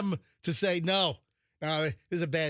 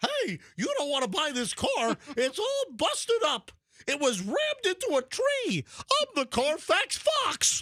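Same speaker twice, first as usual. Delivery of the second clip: very high, slow, swooping voice; 11 semitones higher than usual. Telling Russian buyers about a busted-up car, doing the Carfax Fox voice. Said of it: "I had to do the whole Carfax Fox voice".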